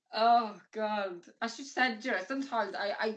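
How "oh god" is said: speaking through laughter, higher pitch. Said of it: "I don't know why I'm laughing".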